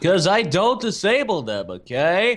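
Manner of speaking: mocking put-on voice.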